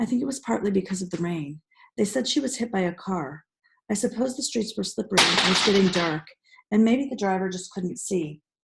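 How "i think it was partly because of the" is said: plain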